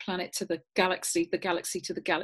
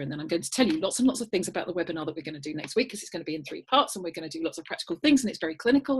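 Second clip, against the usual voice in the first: nonstop, rapid, rattled-off patter. Speaker deliberately rushes to show talking too quickly, talking very fast. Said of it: "I'm talking too quickly".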